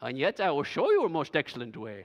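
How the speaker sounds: terrible hammy creature voice, low, swooping and sing-song. Quoting how Paul starts his passage; terrible Yoda impression. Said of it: "It's a terrible Yoda impression".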